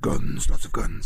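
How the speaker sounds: whispering. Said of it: "I'm just whispering that".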